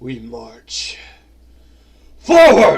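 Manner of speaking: very loud, low, deep, booming creature bellow. Narrator voicing a lava creature as it yells, in a deep voice. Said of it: "In a deep voice".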